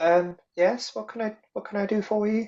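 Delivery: meek gnome woman's voice. Game master voicing a gnomish lady answering a knock at her door, timid gnomish lady voice. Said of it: "a timid, kind of gnomish lady".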